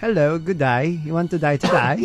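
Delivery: put-on Australian accent. Friends trying an accent they say is hard to imitate: australian accent. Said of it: "Australian accent yan, no?".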